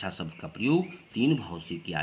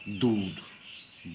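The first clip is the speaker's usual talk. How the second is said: दूध pressed slow and firm. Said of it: "थोड़ा बल देकर बोलना पड़ता है".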